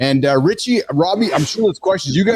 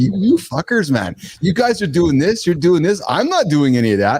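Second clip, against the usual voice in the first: holier-than-thou, judgmental, disapproving rant. Imagining an athlete judging the group's vices: imitating Robbie judging everyone. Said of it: "are you just sitting back there judging all of us".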